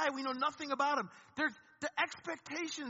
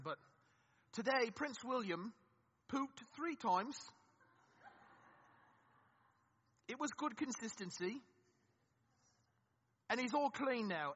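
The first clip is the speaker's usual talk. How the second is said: soft, horrible, put-on British accent; 3 semitones lower, 5 dB quieter than usual. Joking about how much is known of the royal family, in a horrible british accent. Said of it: "this is a horrible British, British accent".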